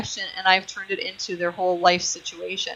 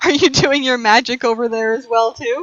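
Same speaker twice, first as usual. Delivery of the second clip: louder delivery with a laugh. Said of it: "I'm sorry, am I doing what?".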